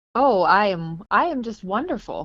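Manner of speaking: dry, deadpan, slow, heavy sarcasm. Answering how they are while sick with covid: sarcastic. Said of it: "that's a little bit of sarcasm".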